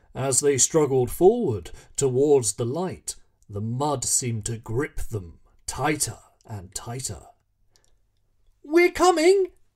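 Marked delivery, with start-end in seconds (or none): 8.6-9.5 very high, calling-out voice. A child struggling through deep mud calls out to a man ahead. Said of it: "called Billy".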